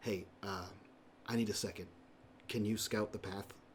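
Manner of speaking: soft, quiet, hushed, private, friendly tone. A player voices his character, hand on a companion's shoulder: quiet voice. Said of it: "he says quietly".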